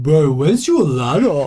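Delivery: put-on voice with every phrase rising in pitch. Retelling what someone at the workshop asked, imitating Christos. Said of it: "I'll do it exactly like he would".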